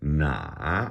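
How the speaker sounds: third tone on na, falling low then rising. Practicing tones, say na with the dipping third tone. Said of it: "third tone. That's the dipping tone".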